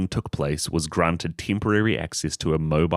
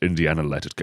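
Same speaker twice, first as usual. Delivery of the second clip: fake Scottish-accented actor voice; 2 semitones lower than usual. Trading impressions while another person says they can't really do it, do a Sean Connery impression. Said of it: "If you talk like Sean Connery".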